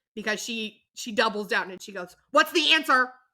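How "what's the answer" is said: insistent, very loud, high-pitched voice. Retelling how the mom doubled down on her question, very loud. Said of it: "very loudly".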